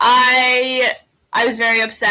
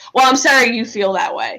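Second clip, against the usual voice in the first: normal talking voice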